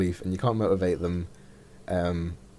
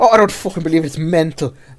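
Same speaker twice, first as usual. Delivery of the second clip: put-on Irish accent, high, shrill, booming, very loud rage; 10 semitones higher, 11 dB louder than usual. Describing an angry man tweeting abuse all day, imitating Graham's Irish rage. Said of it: "in a sort of Irish rage".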